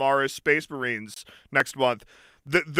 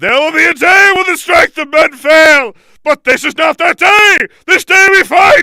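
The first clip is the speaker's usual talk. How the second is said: heroic shout, very high, very loud; 15 dB louder than usual. Describing how they all talk like a captain of Gondor, Buzz Lightyear yelling. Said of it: "like Buzz Lightyear yelling about".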